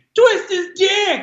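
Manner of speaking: put-on, sudden, very high-pitched screech. Retelling shouting a phrase out in public: retelling own screaming. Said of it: "I would literally just start screaming".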